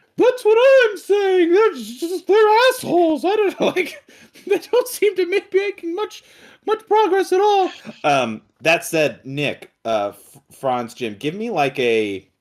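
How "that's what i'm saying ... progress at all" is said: shrill, very high, loud put-on character voice. Voicing Chili stepping in to agree: Chili character voice. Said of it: "all these fucking voices".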